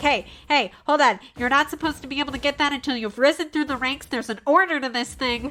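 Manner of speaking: exasperated, slightly panicked, loud, rushed and frustrated. Voicing a character after his attack misses: extremely frustrated, a bit panicky. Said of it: "extremely frustrated, but also a little bit panicky".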